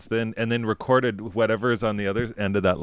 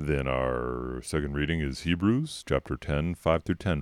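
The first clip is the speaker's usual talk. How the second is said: very low, very deep, hushed, put-on announcer voice; 8 semitones lower, 6 dB quieter than usual. Announcing the Mass readings to a friend, talking all deep. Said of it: "Why am I talking all deep".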